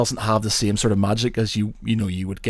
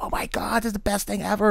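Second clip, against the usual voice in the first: put-on very high, super excited, thrilled little kid voice; 11 semitones higher, 5 dB quieter than usual. Retelling a child running around after winning a toy: imitating a super excited child. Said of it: "super excited".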